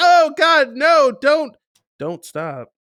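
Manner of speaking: very high, very loud, drawn-out feigned terror. Imitating a film actress's fake fearful protest: imitating put-on fear. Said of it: "put out this air of fear, but really she was kinda into it".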